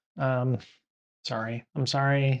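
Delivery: ordinary delivery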